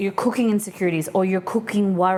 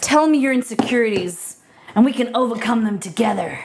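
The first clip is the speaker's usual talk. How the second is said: gruff put-on voice, gritted out; 2 semitones higher than usual. During a stream, talking to viewers in a Batman voice. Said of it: "I don't know why I keep doing a Batman voice".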